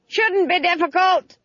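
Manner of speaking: very high scream, as if over a gale. Narrator reads a witch on a broomstick answering another flyer, screaming above the wind. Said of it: "screamed Granny above the noise of the wind".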